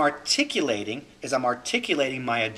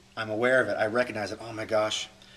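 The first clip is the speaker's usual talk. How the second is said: plain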